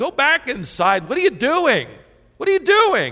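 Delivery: very high, swooping calling-out shout. Retelling a story in which a father shouts at his son: imitating a shout. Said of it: "he shouted".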